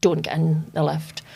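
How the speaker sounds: ordinary talk, nothing marked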